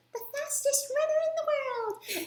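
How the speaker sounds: high-pitched cartoon voice. Retelling running past a woman, the speaker quotes her in a very high Bubbles voice. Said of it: "in like a very high pitched voice".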